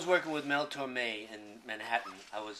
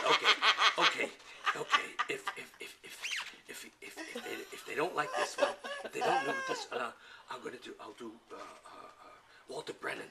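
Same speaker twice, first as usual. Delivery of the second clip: play-acted flustered, frustrated, comic stammering, tripping over words; 4 semitones higher than usual. Retelling an old comedy bit's frustrated moment: imitating a frustrated comic. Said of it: "He gets so frustrated at one point".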